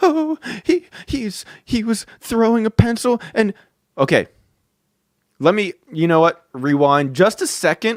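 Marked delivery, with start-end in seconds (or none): 0.0-3.5 play-acted tearful, high, stumbling crying stammer. Retelling how a teacher cried to the principal: imitating someone crying. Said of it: "She starts crying and being like".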